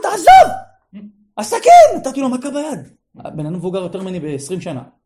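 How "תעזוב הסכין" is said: very loud, very high shriek. Retelling a past incident, screaming at a man twenty years older, re-enacted scream. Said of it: "צרחתי, אמרתי לו".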